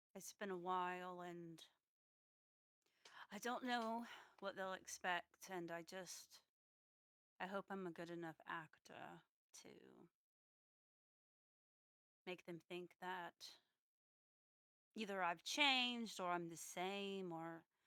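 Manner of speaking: hushed whisper. In a role-played scene, back turned to the other person: whispering. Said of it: "and I'm gonna whisper".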